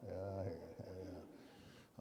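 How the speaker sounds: soft, slow, doubtful, skeptical uh-huh.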